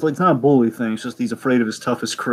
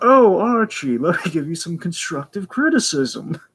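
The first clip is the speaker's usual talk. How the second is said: high, snobby, superior, condescending voice; 6 semitones higher than usual. Speaker recapping an Archie comic, doing Reggie's offer to Archie: mock-snobby Reggie voice. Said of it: "he has that voice too".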